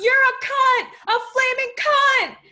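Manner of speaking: screaming at full volume, very high and shrill. At a protest, a protester yells at a woman who has just walked in. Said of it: "yelled [name]".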